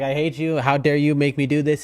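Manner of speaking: mock annoyed, complaining voice. Imitating the person who acts annoyed by the cat: mock annoyed complaint. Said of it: "She's like".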